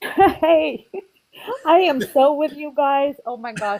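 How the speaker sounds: high, very slow, drawn-out talking through laughter. Reacting to the others' joke, laughing while talking. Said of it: "I'm laughing so hard here".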